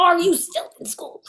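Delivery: high motherly voice. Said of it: "Look at me with my mommy voice".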